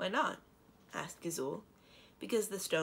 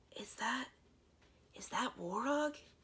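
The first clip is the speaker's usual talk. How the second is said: hushed and pitched-up with a faltering restart; 6 semitones higher than usual. Eleonora asks about the warty toad in a hushed tone. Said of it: "Eleonora asked in a hushed tone".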